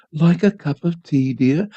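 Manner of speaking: timid, meek, hushed voice, slow. Narrator reads Mother's line to a just-woken father, meek hushed voice. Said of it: "in a meek, hushed voice".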